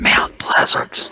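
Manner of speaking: soft whisper, under the breath. Naming a town while admitting being from one of those counties: whispered. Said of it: "I might have to whisper this because I'm from one of those counties".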